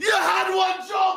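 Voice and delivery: furious rant, screamed.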